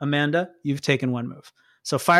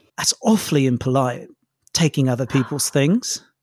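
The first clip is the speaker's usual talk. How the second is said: low, put-on British villain accent; 4 semitones lower than usual. A game master voicing a villain speaking over the players' radio, british villain accent. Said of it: "The villain is British?".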